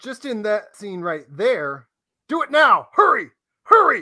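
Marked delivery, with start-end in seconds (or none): 2.3-4.0 frantic, very loud, high-pitched urgent shouting. Discussing a Temple of Doom scene with a co-host, acting out Harrison Ford shouting. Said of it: "he shouts 9".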